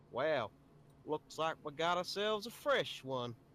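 clumsy, bad, put-on rural American hillbilly accent. Asked to perform an accent, attempting a bad hillbilly American accent. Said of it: "The only one I can do badly is a, hillbilly redneck".

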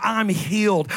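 put-on, joyful screaming. Preaching about getting closer to Jesus, imitating people screaming. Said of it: "People start screaming".

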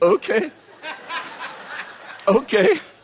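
very high-pitched, frozen, looping, stuck-on-repeat delivery. Speaker retells a customer in a waiting room, imitating a man stuck repeating okay. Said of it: "Like he got stuck in okay".

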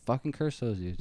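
ordinary talk

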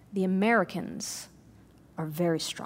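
hushed whisper, leaned in close. Retelling how a soldier leaned in close to whisper: whispering a soldier's secret. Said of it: "he leans forward and he whispers".

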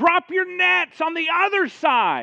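piercing call, very high, very loud, drawn out. Retelling a man calling to fishermen from the shore, imitating a shout. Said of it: "he shouts from the shore".

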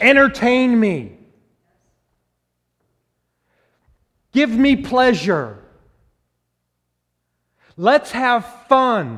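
loud, high, insistent screaming. Speaker voicing the sinful nature trying to get your attention, yelling and screaming. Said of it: "yelling and screaming at you".

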